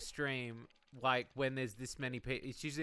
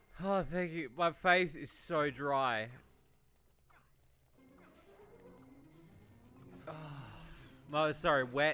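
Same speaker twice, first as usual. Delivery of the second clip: slow, swooping laugh-crying. A speaker reacts to a word that cracked them up, crying with laughter. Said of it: "because I'm fucking crying".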